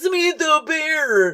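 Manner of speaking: put-on urgent, alarmed shout. Recounting a scene where he yells at her, retelling a yell. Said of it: "he's like yelling at Samantha".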